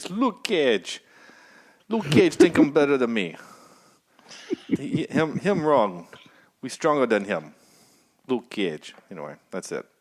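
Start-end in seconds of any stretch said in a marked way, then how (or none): 0.0-9.0 loud put-on Jamaican accent throughout. Retelling lines heard from the show's antagonist: imitating a jamaican accent. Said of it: "the only accent I have is stuck in my head is actually Jamaican".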